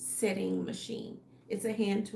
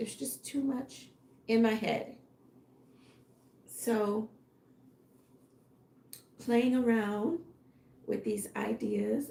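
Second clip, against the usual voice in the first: voice giving out. Thinking aloud about ideas while alone with the dog: voice giving out. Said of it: "I don't know why my voice is leaving me".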